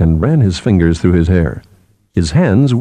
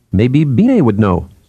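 usual speaking voice

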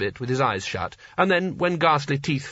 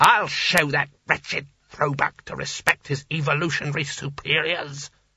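savage, furious snarling with rage. Reading a story: a wizard trembling with rage raises his hands, snarling. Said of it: "he snarled".

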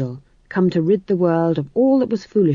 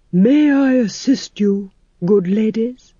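rich, wonderful voice with smoothly gliding vowels; 3 semitones higher than usual. A narrator reads a character offering help to the ladies: rich and wonderful voice. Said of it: "It was a rich and wonderful voice".

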